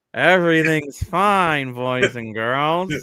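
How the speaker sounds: creepy press-conference voice. Joking about sounding like a player talking to the media: Auston Matthews talking to the media. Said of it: "I feel like I'm Austin Matthews talking to the media".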